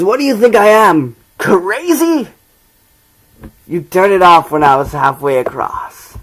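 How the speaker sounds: put-on comic-book villain character voice. Performing a monologue of the Joker speech, Joker voice. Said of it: "tried my best to do my Joker voice".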